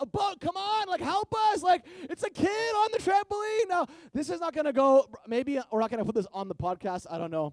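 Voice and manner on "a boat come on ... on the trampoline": very high-pitched yelling. Retelling a sister waving for a rescue boat: imitating someone yelling for help. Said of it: "My sister's yelling for s-, for help".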